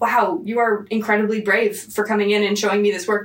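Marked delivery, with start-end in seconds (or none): none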